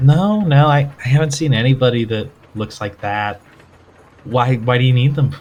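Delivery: flirtatious, flirty talk. Voicing a bartender answering a stranger with a flirty smile: flirty bartender voice. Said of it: "she gives kind of a flirty smile".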